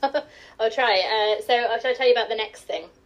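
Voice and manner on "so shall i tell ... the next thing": fast, posh English telephone voice. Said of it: "do my telephone voice".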